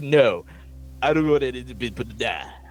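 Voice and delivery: put-on Swedish accent. Retelling a movie scene where He-Man fumbles a line: He-Man's Swedish accent. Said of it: "his, like, Swedish accent".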